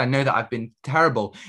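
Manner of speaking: ordinary talk, nothing marked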